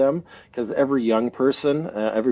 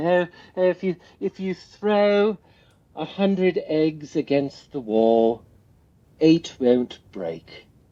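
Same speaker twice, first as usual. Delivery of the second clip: slow, put-on British accent; 5 semitones higher than usual. Telling a listener what a man used to say, you quote him in your best attempt at a British accent. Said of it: "I'm doing my best British accent".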